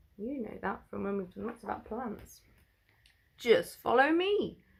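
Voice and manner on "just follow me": put-on high, croaking, lumpy old toad voice. Narrator reads a story aloud, voicing a toad, in a croaky toad voice. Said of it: "croaked a lumpy old toad".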